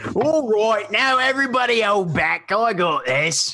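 high-pitched shouted call. Voicing an enemy heard shouting from below: enemy shouting. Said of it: "the one shout that you can hear is".

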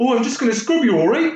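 put-on very high, terrible, botched Canadian accent. Imitating a Canadian scrubbing someone with disinfectant: terrible Canadian accent. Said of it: "That was terrible".

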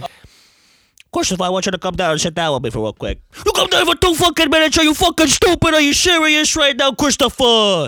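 very high, loud tough-guy haranguing voice. Asked whether they can do Tony Soprano, the speaker obliges: Tony Soprano impression. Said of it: "Tony Soprano".

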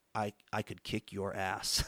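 under-breath mutter. Retelling what a man at a bowling alley said to the speaker, muttered under his breath. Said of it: "says under his breath".

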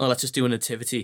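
plain

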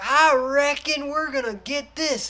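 high, slow, exaggerated Southern drawl.

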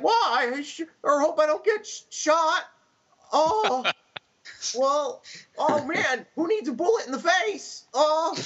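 dopey character voice, very high and very slow. Gamer imitates a party member in an RPG, stupid-sounding character voice. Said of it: "his voice is so stupid".

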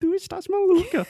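very high, thin, loud put-on European Portuguese accent. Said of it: "a voz ficando mais fina".

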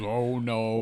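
normal talking voice

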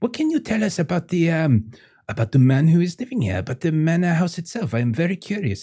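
put-on French accent. A player voices Veronique speaking to other characters; Veronique's French accent. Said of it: "my accents are basically the same".

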